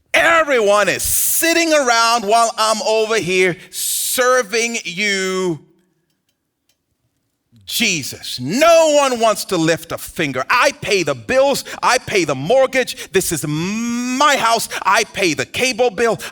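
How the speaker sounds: high, exasperated, fed-up rant, drawn-out "my". Retelling how a woman finally bursts into the living room, retelling a fed-up outburst. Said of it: "she just busts up into the living room like".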